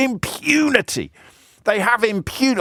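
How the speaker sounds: scornful, contemptuous delivery, pitched very high. Showing off a word that lets you convey emotion, saying it with contempt. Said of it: "you can say it with with contempt".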